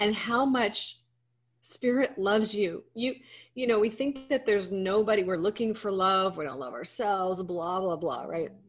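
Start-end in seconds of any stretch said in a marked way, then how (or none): 0.0-2.8 tearful, emotional voice, crying through the words. Addressing listeners, overcome while speaking, emotional and crying. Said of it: "so emotional".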